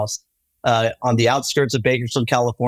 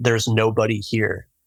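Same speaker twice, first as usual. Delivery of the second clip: put-on deep, guttural male voice. Retelling a voice heard through headphones in an abandoned farmhouse: imitating a deep guttural man's voice. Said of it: "this very deep guttural voice of a man say".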